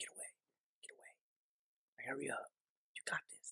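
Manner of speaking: hushed, breathy, low-key, urgent whisper. Retelling a guy recording an alligator and a zebra: imitating someone whispering. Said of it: "he's whispering to the camera".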